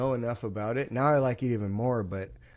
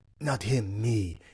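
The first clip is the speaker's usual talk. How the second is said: put-on grunted speech; 3 semitones lower than usual. Retelling what a guy working there said behind the host: imitating a grunted line.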